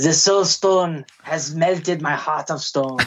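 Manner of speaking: villain voice, put-on French accent. Acting out a movie scene as Red Skull holding the Soul Stone, in French accent. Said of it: "I'm doing a French accent".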